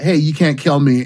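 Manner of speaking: ordinary talk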